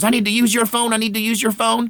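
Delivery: mock-terrified pleading voice. Retelling a woman begging neighbors to use their phone, imitating a terrified plea. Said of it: "She was genuinely terrified".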